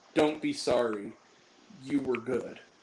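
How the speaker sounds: quiet, slow, unhurried murmur. Retelling a movie scene, the reply to an apology: retelling a line said quietly.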